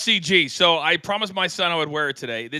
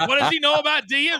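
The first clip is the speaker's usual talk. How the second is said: put-on scream, pitched higher; 9 semitones higher than usual. Retelling what a friend's wife said on FaceTime: imitating Michelle screaming. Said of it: "she's already screamed at me".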